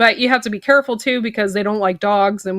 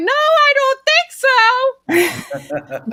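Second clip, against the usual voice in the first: mock very high, very slow, drawn-out shriek. Recounting running to chase a fox off a chicken: retelling a scream at a fox. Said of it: "I'm like screaming".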